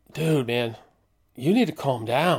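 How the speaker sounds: acted-out whisper. Retelling how the attendant came up behind them with a warning, imitating a whisper. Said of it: "comes up and whispers".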